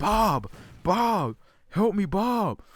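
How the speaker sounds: very high, very slow, drawn-out yelling. Retelling screaming for help as a child: imitating a childhood scream. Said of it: "So I'm just screaming for him".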